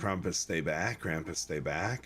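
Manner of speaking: normal talking voice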